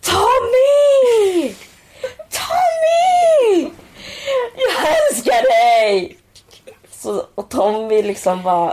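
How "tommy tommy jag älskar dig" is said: mock shout, much higher and louder. Telling how someone shouted at Tommy Berggren on a Stockholm street; retelling a shout. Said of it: "han typ skrik".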